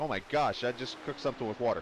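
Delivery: normal talking voice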